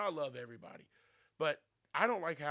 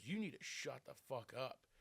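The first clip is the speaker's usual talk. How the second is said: put-on angry outburst, quieter; 8 dB quieter than usual. Retelling what a mom at a Little League game said: imitating an angry mom. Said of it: "this mom gets really mad at my friend".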